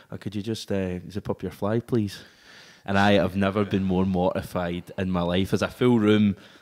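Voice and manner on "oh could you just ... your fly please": put-on Northern Irish accent, quieter and slower. Acting out a man who stops halfway through his first answer before journalists, in a Northern Irish accent. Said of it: "goes in his Northern Irish accent".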